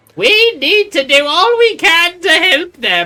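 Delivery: put-on high-pitched old woman voice. Voicing a grandma answering a child's question, in an old grandma voice. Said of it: "I need to practice my grandma voices".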